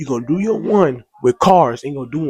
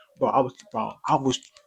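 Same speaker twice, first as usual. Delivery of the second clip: ordinary delivery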